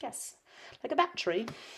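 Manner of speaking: sudden slip into a soft English accent. Replying to a question, slipping into an english accent. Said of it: "I don't know why I have an English accent when I said that".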